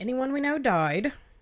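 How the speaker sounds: strained, put-on casual, offhand tone. Quoting a line from an audiobook, imitating a would-be casual voice. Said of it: "does a really good job of doing the casual voice".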